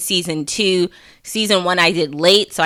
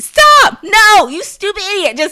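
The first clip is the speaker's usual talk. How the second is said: very high, loud, swooping shouting; 14 semitones higher, 7 dB louder than usual. Retelling watching football on TV, re-enacting own yelling at the TV. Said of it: "But I'm yelling at the TV".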